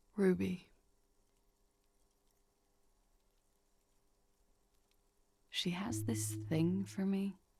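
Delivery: very low, hushed voice. Reading a woman's reply to the narrator asking who shot Lely, in a hushed voice. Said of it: "in a hushed voice".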